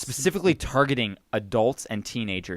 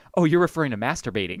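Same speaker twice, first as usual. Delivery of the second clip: usual speaking voice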